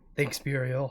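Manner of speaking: muttered under breath. Player character thanking someone as the door widens, muttered under breath. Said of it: "I just under my breath go".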